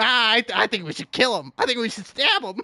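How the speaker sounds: goblin voice, businesslike. Acting out a little green goblin in a business suit: goblin businessman voice. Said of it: "a little green goblin in, in a business suit. And he's just like".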